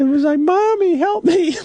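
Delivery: put-on very high, tiny little baby voice. A parent retells their child calling for help, imitating a kid's baby voice. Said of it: "kind of still sort of a baby voice going".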